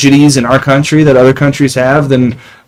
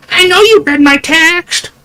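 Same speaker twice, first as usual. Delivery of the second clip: very high, slow, dramatic, accusing voice. Acting out a friend's mother checking on a text: dramatic reenactment of a mother's voice. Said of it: "That was a dramatic reenactment, by the way, of Nick's mother's voice".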